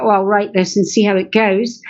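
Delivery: plain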